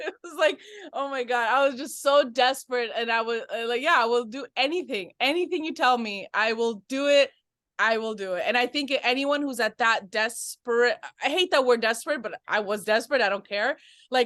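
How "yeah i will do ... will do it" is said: ordinary talk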